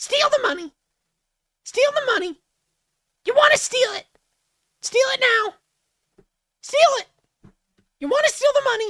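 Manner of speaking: very high, shrill, very loud cartoon demon voice. Asked to do the roar, the speaker performs a cartoonish shoulder demon voice. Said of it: "those cartoonish demons that are uh commonly depicted like above somebody's".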